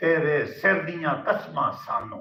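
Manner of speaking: ordinary talk, nothing marked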